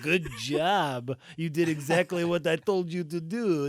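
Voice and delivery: put-on French accent with the word "job" drawn out. Recapping a show scene, imagining what Zemo would say, Zemo impression. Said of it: "This is my Zemo impression. He's French".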